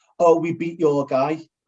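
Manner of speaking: ordinary talk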